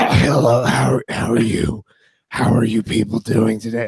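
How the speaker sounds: worn-down, sick-sounding voice. Speaker recalling being sick all week, imitating his sick voice. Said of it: "it got worse to the point where I was just like".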